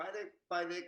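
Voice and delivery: put-on little boy American accent. Retelling how the speaker's dad imitates them as a child: little boy american accent. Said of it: "with a li-, little boy American accent".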